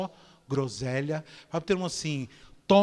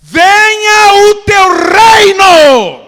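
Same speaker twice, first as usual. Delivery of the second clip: shrill, very loud, high swooping yell, reino drawn out; 24 dB louder than usual. Teaching listeners how to pray, the speaker quotes the prayer: shouting. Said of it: "Eu gritei".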